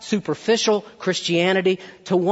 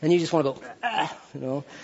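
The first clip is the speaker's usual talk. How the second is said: ordinary talk, nothing marked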